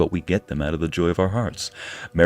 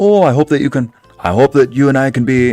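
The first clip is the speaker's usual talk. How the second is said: put-on high, loud, botched leprechaun-like Irish accent; 7 semitones higher, 8 dB louder than usual. Speaker tries an Irish accent on request: failed Irish accent attempt. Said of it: "That's not Irish. Whatever that is".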